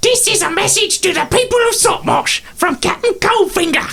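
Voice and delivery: very high, squeaky goblin speech. Narrating a sending stone message spoken through a goblin, goblin voice. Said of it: "in the goblin's voice".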